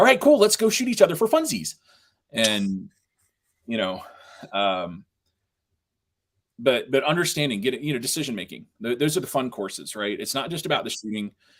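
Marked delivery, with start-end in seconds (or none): 0.0-1.7 acted, very high, bubbly, swooping, puppet-like excitement. Imitating a class instructor described as super enthusiastic: imitating John being super enthusiastic. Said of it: "He's super enthusiastic, and he's like".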